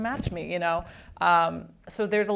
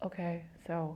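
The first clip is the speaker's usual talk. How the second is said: soft, quiet, empathetic, emotional delivery, quieter; 11 dB quieter than usual. Showing how they direct actors in a quiet emotional moment: imitating own quiet empathetic directing. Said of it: "kind of talk in this kind of voice".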